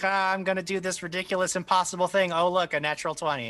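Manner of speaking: put-on sarcastic, high-pitched mocking voice. Teasing the players by mimicking them: mocking imitation of the players. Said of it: "'cause you guys are all like".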